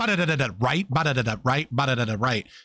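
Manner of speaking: imitated rapid-fire speech. Mocking the other debater for speaking too fast: imitating fast talking. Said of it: "you just like".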